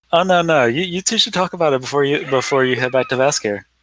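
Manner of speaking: sly, knowing, playful teasing character voice. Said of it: "just kind of grins".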